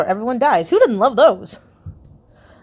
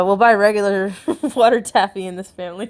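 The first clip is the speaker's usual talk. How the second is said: laughing, breaking into laughs mid-line. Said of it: "let me try that again without laughing".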